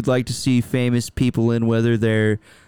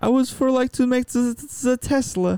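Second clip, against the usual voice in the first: put-on Italian accent, much higher pitch; 13 semitones higher than usual. Speaker asked what Elon Musk sounds like, doing a bad Italian-accent Elon Musk. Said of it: "and I did an Italian".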